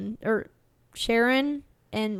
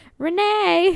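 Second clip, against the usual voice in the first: put-on slight Southern accent, higher and louder; 9 semitones higher, 7 dB louder than usual. Retelling how a cashier called a coworker: imitating her weird accent. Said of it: "She just kinda sounded like she had a little bit of a weird accent".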